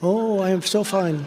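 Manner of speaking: very slow, heavily put-on French accent. Retelling a phone call, give the other man's answer, imitating Emmanuel's French accent. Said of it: "I could never imitate that beautiful French accent".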